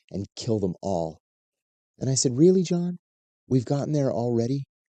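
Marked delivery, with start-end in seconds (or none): 0.1-1.1 low, hushed, close half-whisper. Recounting what a man from the CIA half-whispered in the speaker's ear after a hug, retelling a half-whisper. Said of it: "he whispers in my ear".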